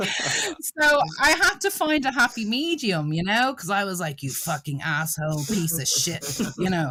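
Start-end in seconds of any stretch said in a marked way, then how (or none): 4.2-6.4 mock-mean delivery. Retelling how she spoke to subscribers: retelling being mean. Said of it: "they said I was being so mean to them".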